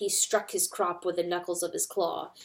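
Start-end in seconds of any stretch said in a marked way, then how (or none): none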